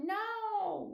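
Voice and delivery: put-on very high, stretched-out no in Australian accent. Showing how they say the word: Australian accent on no. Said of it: "they say no, like, no, like that".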